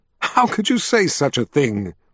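ordinary delivery, nothing marked

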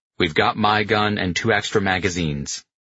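ordinary delivery, nothing marked

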